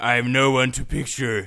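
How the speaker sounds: mocking impression voice. Mocking people who photograph their food: imitating someone who photographs food. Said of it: "I don't know what that impression".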